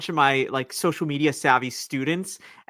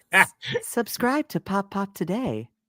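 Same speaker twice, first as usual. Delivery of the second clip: pitched-up synthetic text-to-speech chatbot voice; 5 semitones higher than usual. Offering a co-host different takes of a recording, a speaker does an AI chatbot voice. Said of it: "I can do the really like A I chatbot voice".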